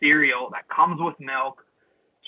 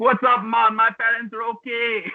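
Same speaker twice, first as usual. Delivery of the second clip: jokey, put-on Jamaican accent, pitched up; 8 semitones higher than usual. Joking how a video maker should have done his video, in a put-on Jamaican accent. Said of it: "not doing it in his Jamaican accent".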